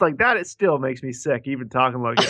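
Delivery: ordinary delivery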